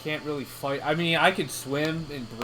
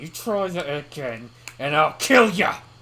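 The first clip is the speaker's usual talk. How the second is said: shouted across a distance; 5 dB louder than usual. Yelling a threat across the lake at another character: yelling across the lake. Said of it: "Yelling across the lake".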